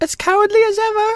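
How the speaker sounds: timid, meek, very high little voice. Narrator reads the cowardly lion answering the girl, in a meek voice. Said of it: "said the beast in a meek voice".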